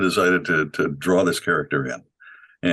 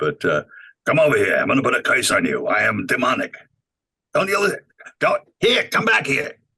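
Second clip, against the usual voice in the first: put-on slight old-man accent, high and swooping; 6 semitones higher than usual.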